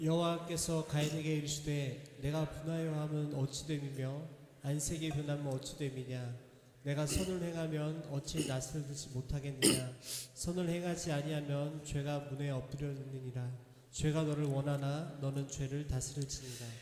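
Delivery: low, soft group reading aloud in unison.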